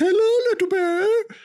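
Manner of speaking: very high, loud, friendly voice. Retelling the other speaker walking toward a bear: imitating Sierra greeting a bear. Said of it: "It's like".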